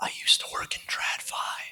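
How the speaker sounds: low, hushed, slow whisper. Giving personal background, admitting former work in TradFi: low voice. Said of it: "I have to say this in a low voice".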